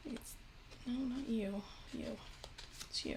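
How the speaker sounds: soft, hushed, whispered aside to herself.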